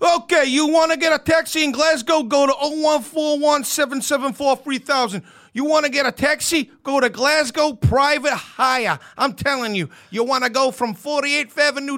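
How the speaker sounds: put-on New York accent. Asked to do an american accent, trying a put-on new york accent. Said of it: "Can you do an American accent?".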